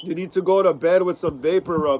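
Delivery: normal talking voice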